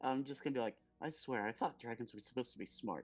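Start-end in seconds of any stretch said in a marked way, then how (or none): 1.0-3.0 soft under-the-breath mutter, still audible. A player voices their character's remark, muttered under breath. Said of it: "I'm trying to talk like it's under my breath".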